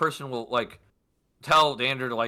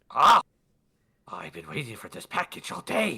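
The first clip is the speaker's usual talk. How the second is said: put-on goblin woman creature voice. A game narrator voices the woman answering the door to a delivering player, goblin woman voice. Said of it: "you hear a woman inside go".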